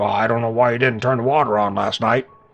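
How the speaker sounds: put-on, grumbling, nagging dad voice. Quoting dad about not turning the water on, put-on impression of dad. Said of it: "that's my impression of him".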